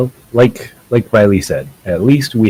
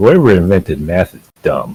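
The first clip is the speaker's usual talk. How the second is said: grumbling, rattled off. Voicing Grow working on a math problem: muttering to himself. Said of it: "Grow is gonna mutter to himself".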